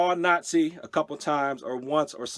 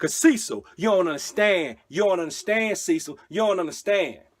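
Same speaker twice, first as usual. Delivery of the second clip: put-on American-accented voice; 3 semitones higher than usual.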